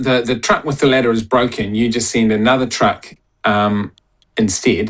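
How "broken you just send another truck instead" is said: ordinary talk, nothing marked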